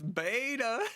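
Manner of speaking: high-pitched, drawn-out meme voice, word beta stretched. Recalling a meme clip: meme voice of Jesse Lee Peterson. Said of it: "that meme voice that goes".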